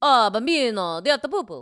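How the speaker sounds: put-on Italian accent. Taking turns doing accents, answering the other speaker's request with an italian accent. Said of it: "How about an Italian?".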